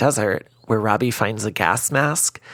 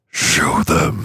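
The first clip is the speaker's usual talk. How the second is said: sinister, low demonic voice; 6 semitones lower, 4 dB louder than usual. Retelling a movie scene where a voice speaks as a hatchet is found, low and demonic. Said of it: "a low, demonic voice says".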